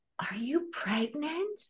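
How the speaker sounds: very soft, high-pitched, hushed whisper. Retelling what a drunk stranger asked her face to face, whispering. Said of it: "she whispers".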